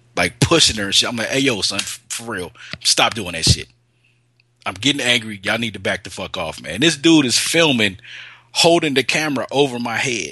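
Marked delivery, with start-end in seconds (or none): none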